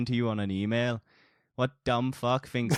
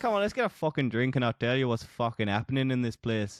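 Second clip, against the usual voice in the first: put-on northern English character accent. Tabletop narrator voicing a character to the players, put-on northern accent. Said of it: "Why did I choose this accent?".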